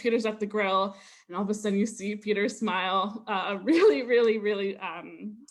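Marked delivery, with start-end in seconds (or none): none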